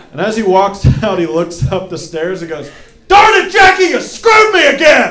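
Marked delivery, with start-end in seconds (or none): 3.1-5.1 very loud, very high, shrill, enraged screaming. Speaker reenacts what a raging man yelled up the stairs, retelling a rage-filled scream. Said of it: "He's screaming at the top of his lungs".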